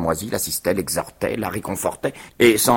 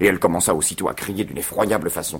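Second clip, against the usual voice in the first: usual speaking voice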